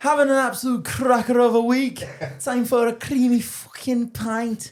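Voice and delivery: put-on Irish accent. Recounting the first video they filmed of Piv, quoting him in an Irish accent. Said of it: "like in an Irish accent".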